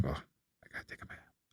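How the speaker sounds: very soft whisper under the breath. Speaker shows what they whisper to themselves at home, whispering. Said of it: "I'm just whispering to myself now".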